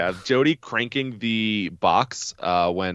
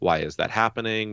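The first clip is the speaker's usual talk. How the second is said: usual speaking voice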